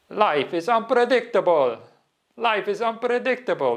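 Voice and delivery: very high, attempted Italian accent. Quoting a man at a monastery who said this every day: italian accent. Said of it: "in his Italian accent, which I can't do, but I'll try".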